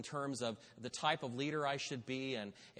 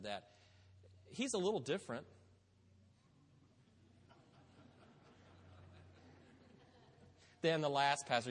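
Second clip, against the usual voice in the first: long, deliberate pregnant pause before the word "than". Speaking about the new lead pastor: long pause before than the last pastor. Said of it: "You like that pregnant pause there?".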